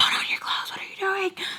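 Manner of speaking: frantic whispered scream. Retelling what the driver screamed inside the car: imitating someone screaming. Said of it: "He screams at me".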